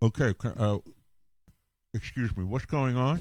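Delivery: put-on speech sounding like something is in the mouth. Retelling turning around in the dentist's chair: imitating talking with something in mouth. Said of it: "I've got the thing in my mouth, so it's like this".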